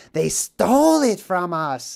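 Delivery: put-on voice of a cave-dwelling fantasy creature. Explaining what happened to Gollum, the speaker quotes him: Gollum impression. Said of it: "That's what happened to Gollum, who's like".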